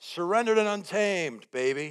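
high but contained put-on calling out. Retelling what a man yelled at the speaker, imitating someone yelling out. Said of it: "He yells out".

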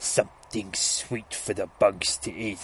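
slow, warped, distorted, twisted voice. Retelling a comic where a voice comes from the tv: twisted voice. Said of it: "we get that same twisted voice again".

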